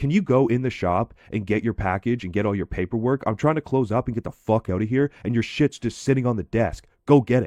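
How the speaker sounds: fed-up, short-tempered, aggravated, impatient voice. Speaker retells what a guy in a truck told him, imitating an aggravated man. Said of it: "he just gets like really aggravated".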